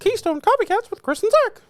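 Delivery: squeaky, very high-pitched voice. Co-host opening the Keystone Copycats show, in a Mickey Mouse voice. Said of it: "I'm Mickey".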